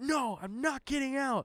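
high, acted-out screaming. Retelling a drunk passenger refusing to get out: imitating her screaming. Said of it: "She's screaming".

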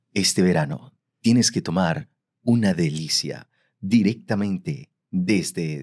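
low commercial voiceover announcer voice. Improvising a wine commercial on the show, in a commercial voiceover voice. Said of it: "¿Tipo voiceover o tipo actuado?".

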